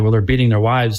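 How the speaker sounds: ordinary delivery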